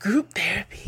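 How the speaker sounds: bizarre, breathy, seductive whispered tone. A marriage and family therapist, talking about healing together, adds a suggestion: bizarre seductive tone. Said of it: "saying group therapy in that bizarre seductive tone".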